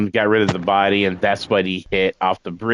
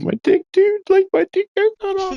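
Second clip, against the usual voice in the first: mock very high, pitiful whimpering, barely talking. Retelling what a hyper kid said after getting hurt, imitating someone whimpering. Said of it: "now he's just like whimpering".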